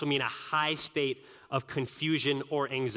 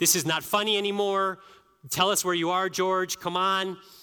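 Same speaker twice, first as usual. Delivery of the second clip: put-on yelling, firm and fed up; 5 semitones higher than usual. Retelling a wife calling out for a missing child: imitating someone yelling. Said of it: "My wife starts yelling".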